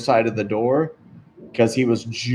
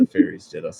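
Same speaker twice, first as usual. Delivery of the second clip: low, muttered aside under the breath; 6 semitones lower than usual. Voicing a character recalling last night's talk: muttering under his breath. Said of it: "he just says under his breath".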